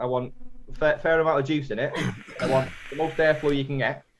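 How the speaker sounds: plain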